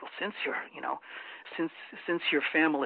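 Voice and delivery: put-on quiet whisper. Retelling what a campaign investigator confided: imitating hushed tones. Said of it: "very hushed tones".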